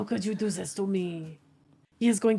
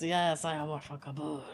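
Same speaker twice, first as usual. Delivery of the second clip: suave, smooth, fake French accent; 4 semitones lower, 6 dB quieter than usual. Answering a chat request for extra French: put-on French accent. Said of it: "For extra French, change voice".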